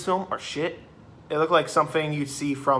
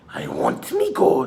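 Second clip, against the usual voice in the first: very high, slow, eerie devilish demonic voice; 12 semitones higher, 3 dB louder than usual. Explaining how a movie wanted a character to sound, in a demonic voice. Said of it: "they want to go for like a demonic voice".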